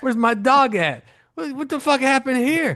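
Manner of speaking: mock drunken outburst, very high pitched and loud. Retelling what a wasted character shouts at Clark: imitating a drunk character. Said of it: "she is wasted".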